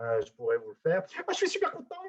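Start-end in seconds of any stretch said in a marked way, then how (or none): 1.3-1.9 delighted, joyful, very high-pitched voice. Showing how tone of voice changes to express something joyful: joyful tone. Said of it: "le ton de ma voix a changé pour exprimer quelque chose de, de joyeux".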